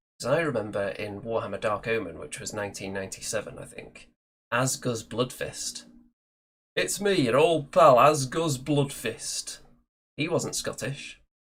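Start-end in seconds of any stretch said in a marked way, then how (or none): 6.8-9.6 put-on proper Yorkshire accent, spoken slow and loud. Recalling a dwarf from Warhammer Dark Omen, quoting him in an Asgus Bloodfist Yorkshire accent. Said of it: "That was a good accent. That's a that's a proper Yorkshire accent".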